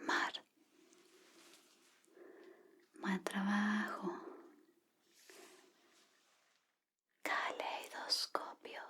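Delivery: whispered words. Giving a pretend listening exam, saying words into the ears: whispering. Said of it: "voy a susurrar palabras en tus oídos".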